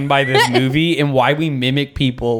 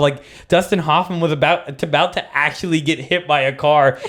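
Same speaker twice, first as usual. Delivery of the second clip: ordinary talk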